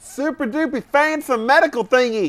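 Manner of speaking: put-on high, dumb-sounding southern accent. Asked to play dumb about a machine for artificial organs, dumb southern accent. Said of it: "It was a southern accent".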